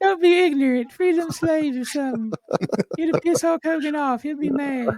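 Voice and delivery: very high, light, falsetto-like put-on voice. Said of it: "a [name] voice as [name]".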